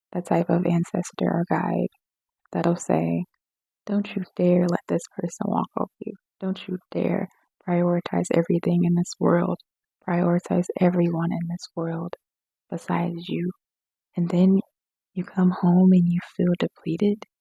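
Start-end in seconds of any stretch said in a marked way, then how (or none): none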